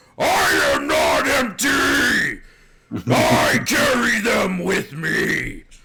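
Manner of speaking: raw, very loud, very high, rising primal rage scream. A character screams at him, primal rage scream. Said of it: "scream at him in this like primal rage".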